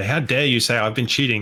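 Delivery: normal talking voice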